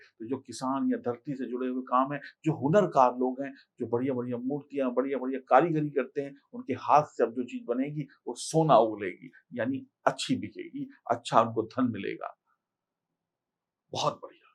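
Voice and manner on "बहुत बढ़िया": hoarse, croaking, almost whispered voice. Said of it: "मेरा तो गला बैठ गया".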